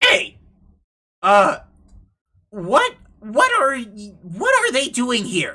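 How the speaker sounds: tiny, small, scratchy, high little voice. Describing a scene, the speaker voices a creature that steps over and asks: small, scratchy voice. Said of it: "in a small, scratchy voice".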